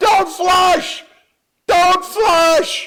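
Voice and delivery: shrill, very high, stretched-out screaming cry. Telling a joke, voicing a blind man in a pool: imitating someone screaming. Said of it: "he's swimming around screaming".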